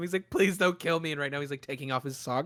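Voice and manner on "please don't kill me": tearful pleading, slower. A storyteller voices a man who has thrown his clothes down, crying and pleading. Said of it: "the other guy is crying".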